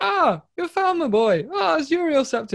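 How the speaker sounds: very high, weird, exaggerated Irish accent. Retelling meeting the Mad God in a game, in Sheogorath's weird Irish accent. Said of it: "He's like got a weird Irish accent".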